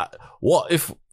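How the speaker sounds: bad Scottish accent, pitched a bit high. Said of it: "You wanna read that in a Scottish accent?".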